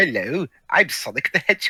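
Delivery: put-on British accent. Imagining a cartoon hedgehog in a top hat drinking tea: imitating Sonic with a British accent. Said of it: "trying to speak in a British accent".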